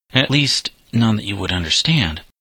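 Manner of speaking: ordinary delivery, nothing marked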